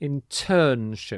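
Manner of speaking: slow internship with its stressed syllable marked. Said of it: "the stress is on this middle syllable again".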